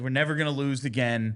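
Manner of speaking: ordinary talk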